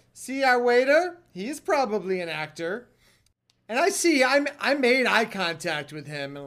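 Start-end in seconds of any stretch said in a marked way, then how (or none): 0.2-2.9 put-on very loud, high-pitched Israeli accent. Retelling what a woman said about their waiter at lunch, in her very loud Israeli voice. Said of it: "in her very loud Israeli voice".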